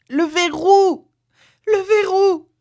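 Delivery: breathless, very high-pitched anguished shouting. Narrator reads a wife crying out to her husband; breathless, anguished shouting.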